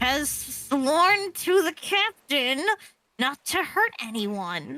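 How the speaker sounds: slow words forced out through clenched teeth. Voicing a character introducing the lieutenant to others: said through gritted teeth. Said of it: "grits his teeth as he senses this".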